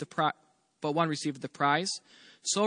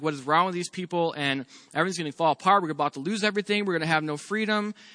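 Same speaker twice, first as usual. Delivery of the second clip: usual speaking voice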